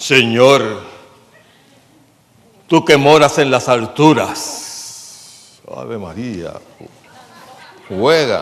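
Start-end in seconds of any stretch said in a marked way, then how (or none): 0.0-5.6 put-on preaching voice, louder. Mocking the voice preachers are taught to pray in: put-on preaching voice. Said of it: "Tienes que aprender a hablar así con una voz".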